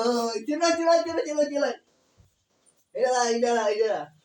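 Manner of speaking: high, loud, excited calling out.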